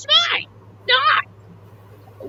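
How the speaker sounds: very high-pitched bickering toy train voice. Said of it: "Bubbles and Bill are arguing".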